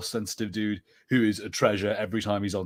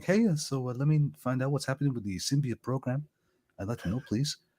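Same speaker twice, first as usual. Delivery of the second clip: mellow, soft, gentle put-on California accent; 4 semitones higher, 3 dB quieter than usual. Imitating an actor from that movie, in a soft california accent. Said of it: "he has that real kind of soft one".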